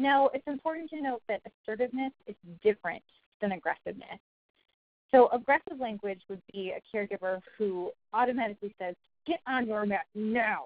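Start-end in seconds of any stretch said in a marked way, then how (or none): 9.3-10.7 slow, angry growl. Demonstrating a caregiver's aggressive language: angry growling voice. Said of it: "in that angry kind of growling voice".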